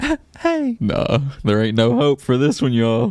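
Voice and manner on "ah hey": put-on tipsy, slurred-sounding, very high-pitched voice. Imitating a drunk driver greeting a police officer: imitating a drunk woman. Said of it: "She looks completely faded".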